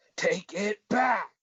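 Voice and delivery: high, slow, drawn-out yelling.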